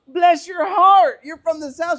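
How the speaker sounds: put-on very loud, very high, thick Southern accent. Retelling Dustin answering a woman who passed by; Dustin's thick Southern accent. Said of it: "real thick Southern accent".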